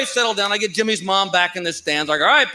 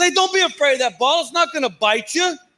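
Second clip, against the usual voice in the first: mock yelling, pitched up, loud and strained; 6 semitones higher than usual. Speaker retells hearing a man yell at his son, imitating a dad yelling. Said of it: "I heard a guy yelling at his son".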